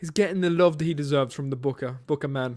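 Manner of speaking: put-on British accent. Praising a wrestler's push, joking: british accent. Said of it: "and I did my British accent".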